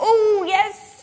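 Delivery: high, excited voice with laughter in it.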